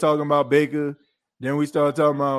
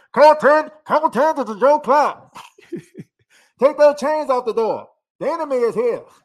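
very high, loud, calling-out voice; 10 semitones higher, 5 dB louder than usual. Mocking how their microphones sound, imitating a call through a door: Joe Clark voice. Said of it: "it sound like Joe Clark".

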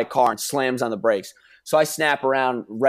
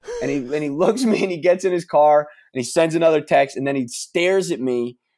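ordinary talk

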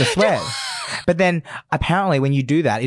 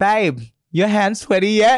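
acted-out high, raised yell; 9 semitones higher, 4 dB louder than usual. Retelling a challenge with sweaty palms, calling out to someone, retelling screaming out. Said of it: "I was screaming out to Amy like".

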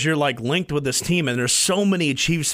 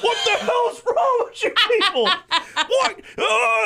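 mock, very high, shrill screeching outburst. Retelling a guy who took an online game so seriously, imitating him screaming. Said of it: "And he's screaming".

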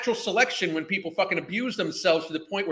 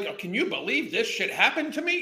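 mock sarcastic wounded-innocent act, fake disbelief; 4 semitones higher than usual. Mocking a woman in a video, imitating her acting the victim. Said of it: "She's trying to pretend like this".

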